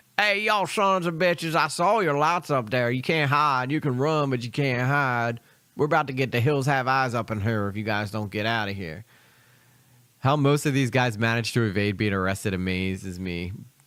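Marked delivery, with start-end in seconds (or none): 0.2-9.1 put-on, drawling Southern accent. Mocking an armed property owner who chases intruders off: put-on Southern accent. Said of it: "It's always the Southern accent".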